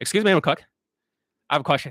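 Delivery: rapid-fire, rattled-off, overconfident speech. Imitating the second Vietnamese guy, imitating very fast talking. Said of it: "talks like this".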